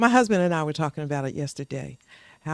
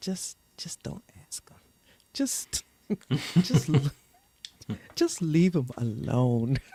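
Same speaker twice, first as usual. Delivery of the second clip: hushed, soft and deep, lowest voice. Retelling a father's words while driving: imitating a soft, low voice. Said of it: "in the softest, lowest voice".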